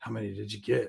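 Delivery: very quiet, low, under-the-breath muttering. Retelling what a bulky man asked the little halfling: muttered under his breath. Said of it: "he kind of under his breath goes".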